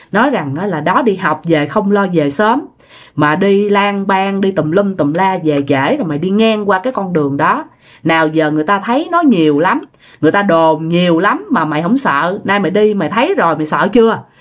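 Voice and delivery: ordinary talk, nothing marked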